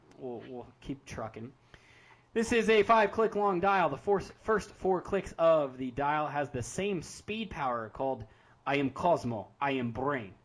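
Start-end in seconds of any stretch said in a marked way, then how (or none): 8.7-10.3 put-on, fake Russian accent. Reading out the name of a dial power: put-on russian accent. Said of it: "You like that Russian accent?".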